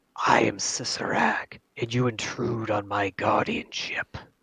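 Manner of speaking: swooping, sibilant snake hiss on every s. Voicing a snake confronting intruders on its guardianship, Cicerak's sibilant hiss. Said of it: "speaks in a sibilant hiss".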